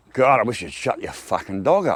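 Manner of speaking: put-on loud, offhand, tossed-out grumbling voice. Retelling a complaint to the neighbour about her dog: imitating own loud remark. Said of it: "I kinda loudly said".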